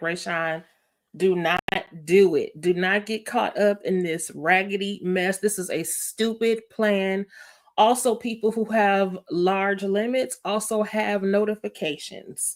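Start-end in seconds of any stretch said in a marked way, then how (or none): none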